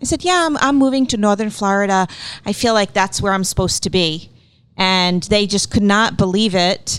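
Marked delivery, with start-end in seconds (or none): none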